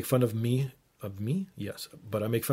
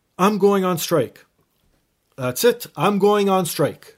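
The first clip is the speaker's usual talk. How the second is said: very high, very loud, shrill all-out yelling; 9 semitones higher, 11 dB louder than usual. Retelling a uniformed man coming out by the washrooms, retelling a man yelling. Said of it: "starts yelling".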